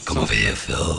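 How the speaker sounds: put-on demon voice, rough and creaky. Riffing on a huge horned movie demon, calling someone over in a demon voice. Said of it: "That was that was me demon voice".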